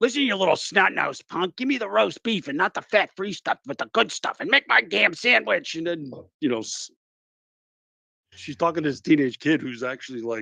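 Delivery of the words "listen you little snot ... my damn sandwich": put-on high, creaky old-lady griping. Retelling a seventy-year-old customer ordering a sandwich: imitating an old woman complaining. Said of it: "bitching and moaning".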